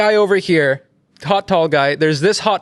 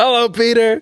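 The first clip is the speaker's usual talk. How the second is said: pitched-up, high, projected calling-out voice; 6 semitones higher than usual. Retelling how Trump greeted the press from the roof, imitating Trump. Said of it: "And he's just like".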